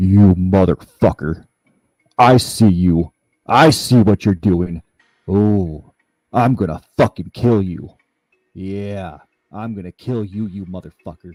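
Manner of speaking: super deep, loud, ominous, menacing, threatening voice. Retelling a voice heard from every angle of the house: super deep voice. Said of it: "This voice is just super deep".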